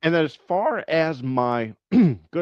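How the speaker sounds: cracking voice. Speaker, who talks eight hours a day at a new job, goes on with voice cracking. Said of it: "my voice is cracking".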